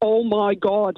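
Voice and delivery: put-on really thick, broad Northern Irish Derry accent. Retelling a cousin from Northern Ireland coming out of the other toilet, really thick Derry accent. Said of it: "in a really thick Derry accent".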